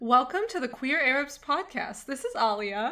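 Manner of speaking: lively expressive tone. Opening the podcast, trying to have intonation for once: lively expressive intonation. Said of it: "me trying to have intonation for once".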